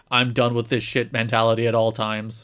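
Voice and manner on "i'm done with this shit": usual speaking voice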